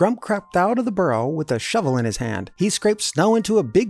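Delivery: plain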